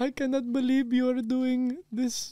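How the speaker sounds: very high, tearful weeping voice. Telling a friend how their mom reacted on the phone, imitating mom crying. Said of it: "she cried to me on the phone".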